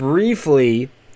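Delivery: extra stress on the word briefly. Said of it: "I stress the word briefly".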